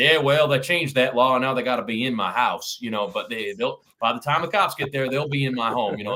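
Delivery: put-on Texas-style good-ol'-boy accent. Speaker retells their dad answering a question at a meeting, in a texan accent. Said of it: "my dad breaks into this Texan accent and says".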